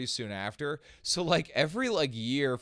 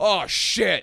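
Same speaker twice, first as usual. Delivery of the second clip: put-on Brooklyn voice, higher and louder; 7 semitones higher, 9 dB louder than usual. Imitating how someone from Brooklyn would react: imitating a Brooklyn local. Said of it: "someone from Brooklyn would be like".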